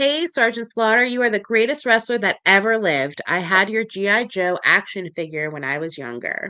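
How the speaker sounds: ordinary delivery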